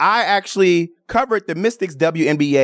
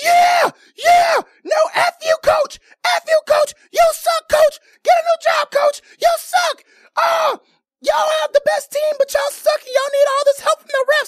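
very shrill, high, rapid, rattled-off taunting heckling yell. Recounting a fan behind them at a Dallas Wings game, imitating a fan yelling. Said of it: "She was yelling at the top of her lungs".

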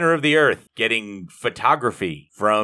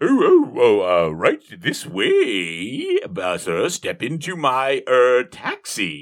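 put-on disguised voice, higher and much slower; 3 semitones higher than usual. Retelling how the Colonel disguises his voice to offer a taxi ride, disguised voice. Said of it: "I always feel like the voice should be".

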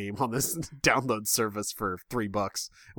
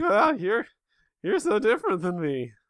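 mock voice crack, much higher pitch; 11 semitones higher, 4 dB louder than usual. Speaker reenacts for a co-host how they sounded moments ago, imitating own voice breaking. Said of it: "probably what I sounded like".

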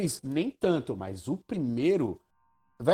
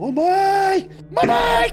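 put-on scream, much higher, louder; 8 dB louder than usual. The speaker retells someone letting out a huge scream, retelling a huge scream. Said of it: "ainda deu um puta de um grito".

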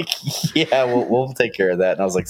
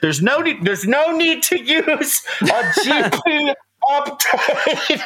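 mock angry-sounding raised voice, very high, slow. Retelling how lines sounded to a class over chainsaw noise: imitating own raised voice. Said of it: "I've just been raising my voice".

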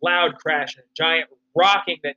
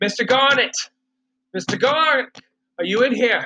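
high, distraught, frantic screaming; 6 semitones higher than usual. Narrator voicing Quincy banging on Mr. Garnet's door, frantic and screaming. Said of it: "He's frantic and screaming and sounds distraught".

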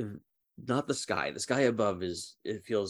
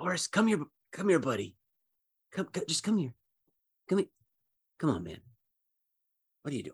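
stage whisper, much higher, faster; 7 semitones higher than usual. The game master voices someone calling Horace from the darkness; stage whisper. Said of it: "It's a stage whisper".

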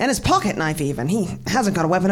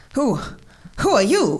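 insistent, pressing, demanding tone; 4 semitones higher than usual. Devereaux confronts a stranger who greets him in the empty room; demanding. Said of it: "demanded Devereaux".

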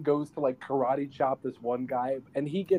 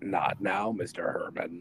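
mock dubbed-over deep voice, lower and quieter; 7 semitones lower, 6 dB quieter than usual. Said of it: "a dubbed over, like, deep voice".

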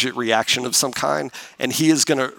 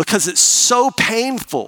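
plain

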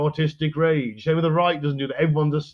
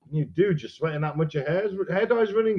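ordinary talk

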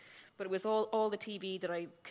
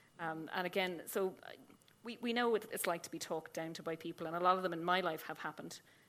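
usual speaking voice

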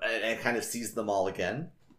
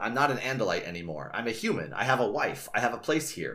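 ordinary delivery, nothing marked

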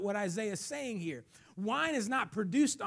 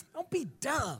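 disgusted and slower; 4 semitones higher than usual. A speaker shows the audience how to say it to their neighbor, disgusted. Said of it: "say it like you're disgusted".

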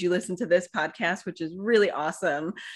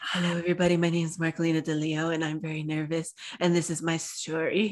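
imitated, put-on mock whisper. Recalling her first podcast episode, imitating herself whispering. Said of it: "I'm pretty sure the first episode I'm whispering on".

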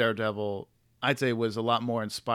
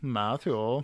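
put-on Swedish male accent. Redoing an impression of a man calling out to Matthew, in a Swedish man's accent. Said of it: "more like a Swedish... Man going like".

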